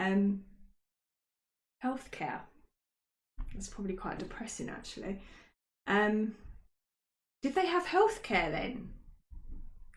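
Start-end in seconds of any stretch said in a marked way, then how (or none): 7.4-8.9 high-pitched, inquisitive, curious voice. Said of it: "I hear you ask".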